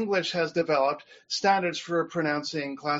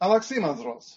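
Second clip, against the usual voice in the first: louder, native modern Greek accent. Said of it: "the way it would be said in modern Greek pronunciation".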